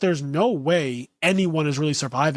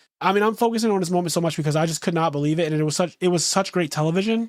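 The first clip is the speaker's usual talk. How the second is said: normal talking voice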